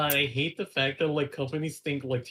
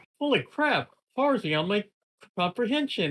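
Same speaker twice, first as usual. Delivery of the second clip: high, swooping, overjoyed cartoon voice full of delight; 7 semitones higher, 3 dB louder than usual. Explaining a meme image: imitating Peter Griffin, really happy. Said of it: "really happy about it".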